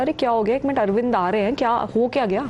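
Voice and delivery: ordinary delivery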